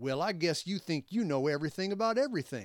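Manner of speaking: loud, assertive, put-on sneering tone. Retelling what an offended stranger said to him: mock sneering. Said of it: "he sneered assertively".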